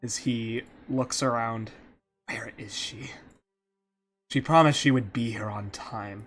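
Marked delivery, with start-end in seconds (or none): 2.3-6.3 irritated voice spoken through clenched teeth. Voicing Zarin, who waits in the shadows for someone late: annoyed through gritted teeth. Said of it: "gritting his teeth in annoyance".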